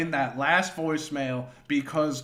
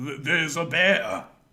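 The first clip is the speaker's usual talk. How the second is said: imitated drunk man's voice. Retelling what Leo said to a neighbor about a bear: imitating drunk Leo. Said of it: "sounds stupid 'cause he's drunk".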